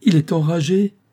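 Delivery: high, frightened, alarmed, panicked cry. A woman realizes the man before her is rabid; panicked cry. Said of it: "Affolée, elle appela au secours".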